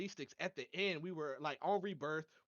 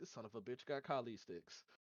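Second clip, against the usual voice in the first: put-on very calm, soft, unbothered delivery; 5 semitones lower, 8 dB quieter than usual. Retelling what another player said in a game: imitating a very calm voice. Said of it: "with the calmest voice was just like".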